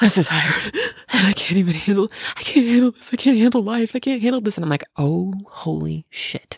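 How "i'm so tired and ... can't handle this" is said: put-on hysterical sobbing, much higher pitch. Retelling how Lita was when the speaker came upstairs, imitating Lita crying hysterically. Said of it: "she is hysterically crying".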